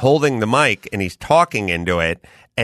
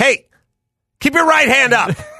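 put-on barking yell, raised and pitched up; 4 dB louder than usual. Retelling what they said to her after it happened eight times, retelling own yell. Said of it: "why are you yelling at me?".

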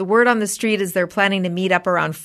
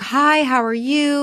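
put-on super nice, friendly mom voice, higher; 8 semitones higher than usual. Retelling how a super nice mom introduced herself: imitating a super nice mom. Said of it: "very much like".

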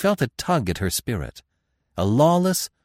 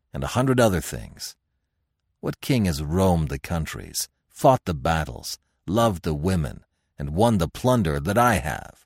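ordinary delivery

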